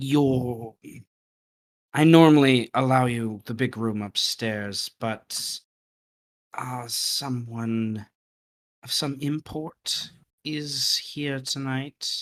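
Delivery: stage whisper with voice. A woman from behind the bar pulls you aside by a table: half-whispering. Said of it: "she goes into your shoulder and whispers".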